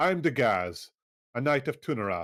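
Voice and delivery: haughty knight character voice. Narrating a game, voicing a knight landing on your ship's deck: haughty Dagaz voice. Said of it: "she says in a rather haughty tone".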